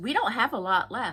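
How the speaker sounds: mock snippy voice with a little attitude. Retelling what a store clerk said on entering: imitating a clerk's attitude. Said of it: "with a little attitude in his voice".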